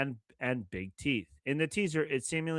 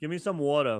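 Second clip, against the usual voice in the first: Philadelphia accent. Showing how someone from philly says water, in a philly accent. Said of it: "I'm from Philly".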